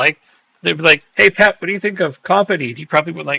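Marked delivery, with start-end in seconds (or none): none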